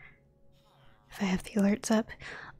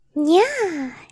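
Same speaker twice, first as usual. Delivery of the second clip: very high, loud squeaky cute nya. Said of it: "Nyas for Andres".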